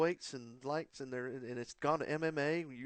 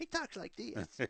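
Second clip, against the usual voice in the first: put-on, slow, breathy voice, near a whisper; 7 semitones higher, 5 dB quieter than usual. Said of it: "I want you to go up and mimic him".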